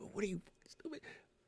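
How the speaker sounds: mock muttering under breath. Retelling tech support calls, muttering at people on the phone: imitating muttering under breath. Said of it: "yelling at people on the phone under my breath".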